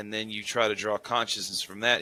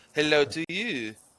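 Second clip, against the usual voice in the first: put-on Swedish accent, pitched up; 6 semitones higher than usual. Greeting a caller, trying a put-on Swedish accent. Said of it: "Trying to do, like, this Swedish, Finnish".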